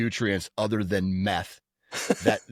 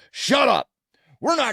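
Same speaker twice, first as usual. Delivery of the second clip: put-on snapping tone, higher and louder; 6 dB louder than usual. Retelling how he snapped at the lady: imitating someone snapping. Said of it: "he just snaps at her".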